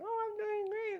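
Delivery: very high, piping character voice. Trying out a voice for a character who still needs a name, very high-pitched voice. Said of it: "somebody that's very high pitched saying".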